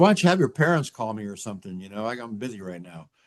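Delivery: ordinary talk, nothing marked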